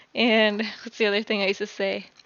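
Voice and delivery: ordinary talk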